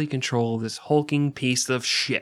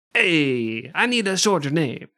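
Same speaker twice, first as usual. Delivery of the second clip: put-on Italian accent, long drawn-out "hey"; 4 semitones higher than usual. Showing how everyone at that institute speaks: italian accent. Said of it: "That's how I did that".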